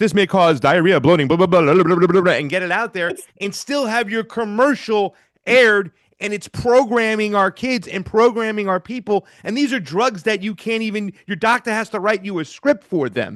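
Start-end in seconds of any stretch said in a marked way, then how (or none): 0.0-2.3 rapid-fire, rattled-off fine-print disclaimer style. Complaining about drug commercials, mimicking their side-effect list: fast drug-ad disclaimer voice. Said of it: "they can just do that fast voice".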